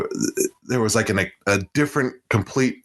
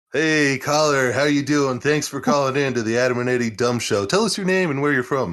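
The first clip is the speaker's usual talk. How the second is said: talk-radio DJ patter in radio host voice; 4 semitones higher than usual. Host greeting a caller on the show, in a radio host voice. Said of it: "did I do my radio voice to her?".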